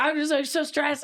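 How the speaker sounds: high, teary sobbing through the words. Retelling calling mom while stressed: imitating own sobbing. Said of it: "I'll be fucking sobbing".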